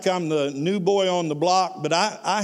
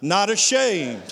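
said louder. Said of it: "can you say it just a little bit louder".

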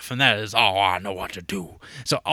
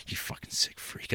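put-on muttering under the breath, much quieter. Retelling store customers judging someone renting tapes, retelling a mutter under the breath. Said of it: "under their breath going".

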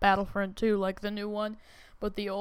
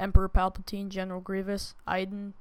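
ordinary delivery

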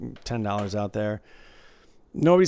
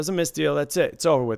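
ordinary talk

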